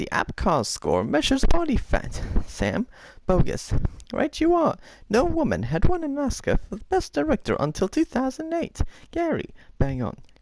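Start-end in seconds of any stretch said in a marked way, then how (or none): 4.1-8.8 very high, squirrely voice. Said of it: "Okay, Squirrely".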